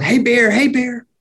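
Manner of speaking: mock, high-pitched hollering yell. Retelling jumping up to scare a bear while out walking, retelling a yell. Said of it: "start yelling".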